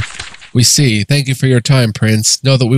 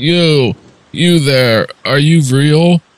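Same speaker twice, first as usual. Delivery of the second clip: slow, thick-tongued, slurred speech; 4 semitones higher than usual. A narrator voices one of the blessed calling out to the visitor, loud and slurred. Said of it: "One says in a loud, slurred voice".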